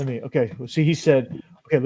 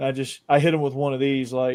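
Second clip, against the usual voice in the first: usual speaking voice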